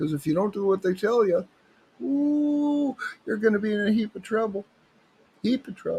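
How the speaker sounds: put-on high southern Ontario accent, ooh stretched. Comic bit done in his best southern Ontario accent. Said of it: "That's my best southern uh, southern Ontario accent".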